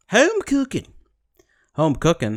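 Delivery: sing-song put-on Australian accent, not quite convincing. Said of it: "I can do my Australian accent".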